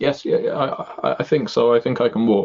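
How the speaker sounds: trembling, terrified halting voice. In a played-out scene, a frightened woman answers whether she can walk; shaking voice. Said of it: "she's shaking like like it was going out".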